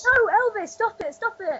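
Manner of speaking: shrill, high, loud, frantic shout. Calling out to Elvis, who is eating all the biscuits, shouting. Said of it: "just shouting".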